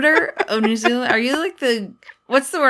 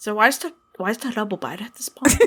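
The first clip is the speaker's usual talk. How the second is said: put-on New Zealand accent; 3 semitones lower than usual. Imitating someone from a show in a put-on New Zealand accent. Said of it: "How's my accent? How is my New Zealand accent".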